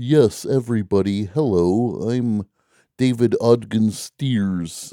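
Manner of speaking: exaggerated American accent, very slow and drawn out. Imitating him in interviews: David Ogden Stiers, exaggerated American accent. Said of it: "he would work overtime to do this American voice".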